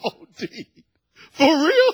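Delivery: put-on words squeezed out through high, loud, hard laughter. Retelling their own reaction to his answer, acting out laughing so hard. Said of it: "I'm laughing so hard".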